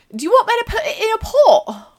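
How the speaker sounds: put-on loud, high, fast Cumbrian accent. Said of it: "the redneck accent of England".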